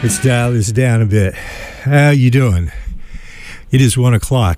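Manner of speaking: slightly breathless voice. Radio host opening the show on WMFO: slightly out of breath. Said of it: "I am slightly out of breath".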